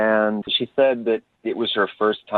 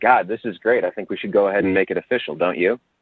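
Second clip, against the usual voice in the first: imitated deadpan, flat delivery. Retelling a joke made on a date: imitating own deadpan delivery. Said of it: "Totally deadpan".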